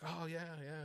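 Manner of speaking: very high, thick southern drawl. Retelling what a woman of about seventy said: imitating a thick southern drawl. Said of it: "she has got a thick southern drawl".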